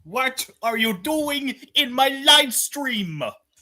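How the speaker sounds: cartoon ogre voice pitched very high. Asked on a live stream to say it in Shrek form, Shrek voice. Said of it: "are you able to say this in Shrek form?".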